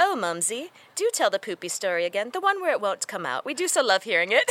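put-on British accent, played for laughs. Parent retells their 13-year-old asking her to tell a story again, put-on british accent. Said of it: "pulls up the best British accent ever".

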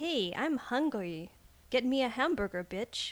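put-on New York accent. Taking turns doing accents in a game: new york accent. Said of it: "I can only do like a New York accent".

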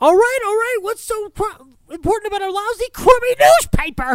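very high fluting voice. Retelling a movie scene, imitating a character's very high voice. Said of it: "Levinson has this beautiful high fucking voice".

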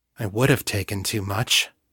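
quiet, soft, hushed. Kate sits up, looks at Henri, and speaks to John quietly. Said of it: "she said quietly".

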